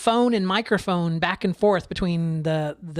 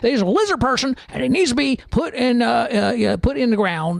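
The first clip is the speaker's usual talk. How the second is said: put-on very angry voice, higher pitch; 4 semitones higher, 4 dB louder than usual. Mimic a forceful man who sounds like Alex Jones, imitating a very angry Alex Jones type. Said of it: "He's very angry about the whole thing".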